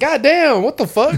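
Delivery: fake Boston accent, very slow. Acting out someone catching a cabin builder: put-on Boston accent. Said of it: "He has a Boston accent".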